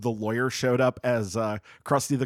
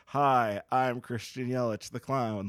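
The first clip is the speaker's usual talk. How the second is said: put-on flat voice; 4 dB quieter than usual. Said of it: "Like it would just be very flat".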